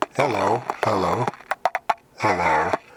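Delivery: low-pitched, robotic-sounding voice. Testing microphone pitch settings, the speaker greets listeners in a low robot voice. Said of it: "I'm much lower robot now".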